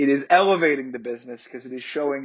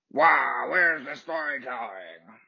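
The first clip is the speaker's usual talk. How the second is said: put-on grouchy cartoon voice. Speaker mocking grumpy wrestling fans, mock-grouchy Wario Cornette voice. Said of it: "gonna do that voice from now on".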